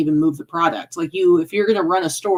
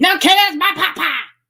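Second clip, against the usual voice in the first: put-on cartoon kid voice, higher; 12 semitones higher than usual. Retelling what Jacob said about the pot pie, as a bad Cartman impression. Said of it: "we're not very good at, um, impressions".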